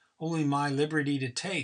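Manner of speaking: plain reading voice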